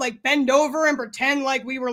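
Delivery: ordinary talk, nothing marked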